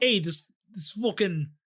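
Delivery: put-on Boston accent. Pitching a guy with a boston accent doing the ten-second countdown, boston accent. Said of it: "a Boston accent doing the 10-second countdown".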